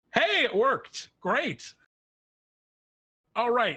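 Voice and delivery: echoing booming voice. A gigantic face looks down at everyone from the book, booming voice. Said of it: "this booming voice echoes down".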